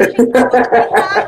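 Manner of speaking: loud, complaining speech through laughter.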